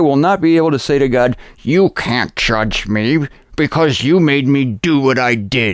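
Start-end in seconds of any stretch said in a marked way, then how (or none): 1.6-5.7 laid out slowly, word by word. Role-playing the king of Assyria speaking to God: as the king of Assyria. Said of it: "I'm going to take the king of Assyria".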